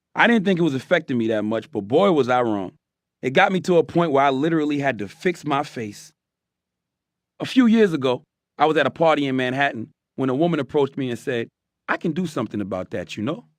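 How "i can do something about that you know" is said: put-on British-accented delivery. Retelling a woman's words at a party: imitating a British accent. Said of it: "in a British accent".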